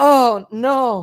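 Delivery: sad, defeated groan of dismay, utterly beaten. Describing a favorite film scene, the speaker is imitating a sad, beaten 'oh no'. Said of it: "it's such a sad like he just got beaten".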